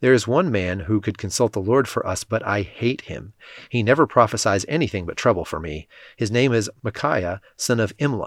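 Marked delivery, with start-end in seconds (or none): none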